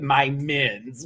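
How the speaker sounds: normal talking voice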